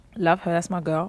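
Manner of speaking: ordinary talk, nothing marked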